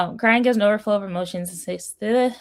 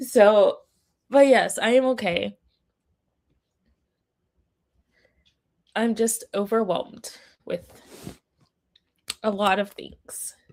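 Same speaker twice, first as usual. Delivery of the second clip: speaking through tears. Talking to the audience while overwhelmed, crying while talking. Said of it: "now I'm crying".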